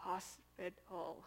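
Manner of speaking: whispered, strained, forced-out single word. Retelling telling Josh to go to hospital while numb: imitating struggling to get a word out. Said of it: "all I could do to get the word out".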